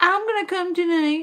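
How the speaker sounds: high, giggly, silly mock streamer voice.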